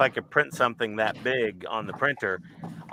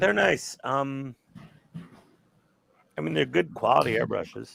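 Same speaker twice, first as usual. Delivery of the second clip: disappointed, let-down tone; 3 semitones higher than usual. Commenting on another speaker's new airbrush, sounding disappointed. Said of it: "so disappointed".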